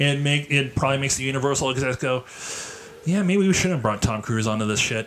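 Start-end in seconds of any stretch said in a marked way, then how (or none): none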